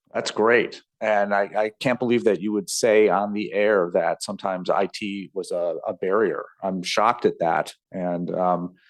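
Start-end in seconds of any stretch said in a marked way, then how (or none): none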